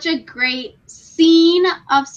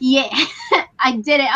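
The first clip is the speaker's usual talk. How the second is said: plain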